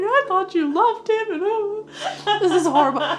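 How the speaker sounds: mock very loud, very high tearful sobbing wail.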